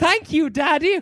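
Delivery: prim, prissy, high-pitched voice. Imagining a scene and acting it out: prim, prissy Veruca Salt voice. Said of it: "Veruca Salt all prim and prissy".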